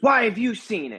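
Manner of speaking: very high, demanding, put-on yell. Retelling being questioned about something shared with them: imitating someone yelling. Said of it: "She's yelling at me".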